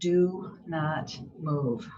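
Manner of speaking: put-on whisper. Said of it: "like a whisper in my ear".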